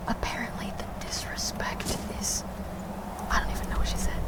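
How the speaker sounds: whispering softly. Speaker comments on what a game character said, quiet whisper. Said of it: "I have to whisper really quietly".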